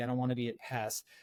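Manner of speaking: ordinary delivery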